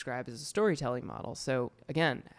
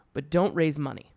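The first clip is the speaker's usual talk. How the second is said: sudden, blunt, intense delivery, louder; 2 semitones higher, 6 dB louder than usual. Retelling how advisors suddenly shift cadence to warn: imitating a sudden intense warning. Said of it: "a totally different cadence than what they were saying previously".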